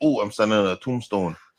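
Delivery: ordinary talk, nothing marked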